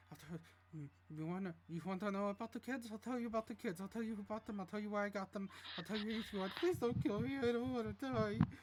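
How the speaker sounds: mumbled, babbling character voice. Voicing a captured man who mutters and begs not to be killed: muttering NPC voice. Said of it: "you hear him muttering".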